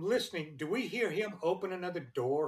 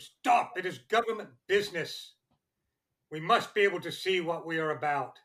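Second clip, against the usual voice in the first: loud raised yelling; 6 dB louder than usual. Yelling at Jonas to stop him snapping his torch off: yelling. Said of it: "I'm going to yell at him".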